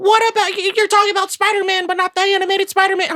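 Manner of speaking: very high mocking objecting voice. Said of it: "a lot of people are gonna be like".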